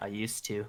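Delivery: soft, barely audible mutter under the breath. Voicing a character's barely audible reply at the table: muttered under breath. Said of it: "just under my breath".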